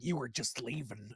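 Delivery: animated comic-book hero voice. Retelling an actor's line said like the animated Wolverine: imitating animated Wolverine voice. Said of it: "just like the animated Wolverine".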